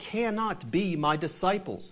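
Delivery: ordinary delivery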